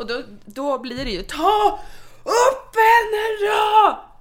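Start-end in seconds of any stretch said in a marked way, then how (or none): 1.2-4.0 play-acted very high, very slow, irritated, angry voice. Retelling asking someone to pick up the crying baby: retelling an angry call.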